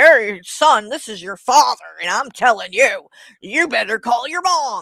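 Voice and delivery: mock condescending, loud, talking-down fatherly tone. Imitating someone talking down to his son: imitating condescending talk. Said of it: "talk down to him and say".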